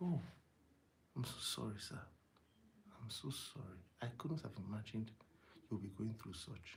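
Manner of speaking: hushed, very soft, calming, de-escalating tone. Demonstrating how to apologize to an angry prospect, in a low voice. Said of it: "So low".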